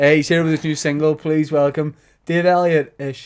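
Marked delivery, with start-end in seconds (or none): none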